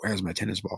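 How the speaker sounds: quiet whisper under breath. Retelling saying a line quietly to oneself: imitating a whisper under breath. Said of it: "I kinda whispered under my breath".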